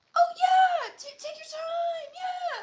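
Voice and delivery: pitched way up, slow and gentle. Retelling how Conrad talks gently in the show: imitating Conrad's voice pitch. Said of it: "the pitch that his voice goes to".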